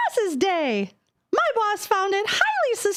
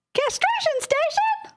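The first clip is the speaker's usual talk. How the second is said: high cartoon mouse character voice; 8 semitones higher than usual. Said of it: "in your Mickey Mouse voice".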